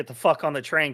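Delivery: ordinary delivery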